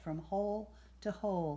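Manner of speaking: plain reading voice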